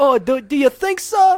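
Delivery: put-on condescending Boston accent, very high, very loud. Speaker demonstrates their habitual patronizing voice: patronizing Boston or Brooklyn accent. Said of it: "a Boston accent or a Brooklyn accent".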